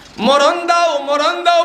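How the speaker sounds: loud screaming voice.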